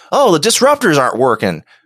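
put-on Southern accent. Imitating a Klingon helms officer who speaks with a Southern accent. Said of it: "It sounded kinda Southern to me".

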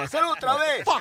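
play-acted very high, in-your-face shouting. Retelling a police stop where the officer yelled: imitating a cop yelling. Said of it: "me gritando en la cara".

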